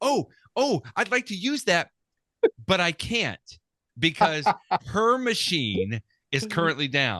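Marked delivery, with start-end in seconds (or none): 0.0-1.9 high, mock eager, really excited chirp. Speaker retells a woman seeing the phone driver's license, imitating her excitement. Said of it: "she got really excited".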